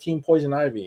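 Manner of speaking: ordinary talk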